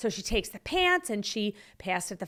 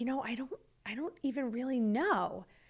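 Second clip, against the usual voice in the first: put-on held-back tears, quieter; 8 dB quieter than usual. Retelling a woman's answer when asked what happened, imitating someone holding back tears. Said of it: "she's like holding back tears at this point".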